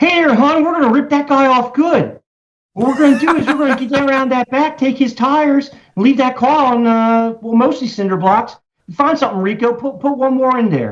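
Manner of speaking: very high-pitched Baltimore accent. Showing how to do the Baltimore accent, Baltimore accent. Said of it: "that's the Baltimore accent".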